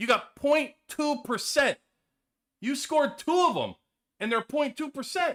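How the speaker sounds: disbelieving tirade.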